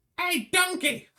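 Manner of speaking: loud, very high-pitched hollering call. Talking about Shrek's original accent, saying the line in a Shrek voice. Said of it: "doing a bit of the Shrek".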